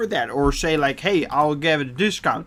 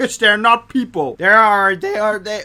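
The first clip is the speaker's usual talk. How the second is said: high, cracking voice, baffled disbelief; 6 semitones higher, 4 dB louder than usual. Ranting about people online, voice cracking while ranting. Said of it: "I'm so mad that I'm getting voice cracks".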